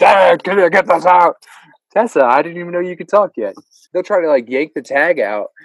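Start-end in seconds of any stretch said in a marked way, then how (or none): 0.0-1.4 put-on slow, cranky, grumpy old-man voice. A parent imitates a child asking to have a shirt tag removed, imitating a grumpy old man. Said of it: "all my kids sound like a grumpy old man".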